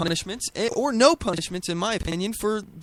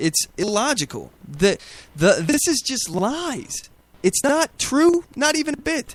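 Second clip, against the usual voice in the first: angry, flustered, heated, with rising pitch; 2 semitones higher than usual. Ranting about a claim to viewers, angry and flustered. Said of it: "I'm getting angry".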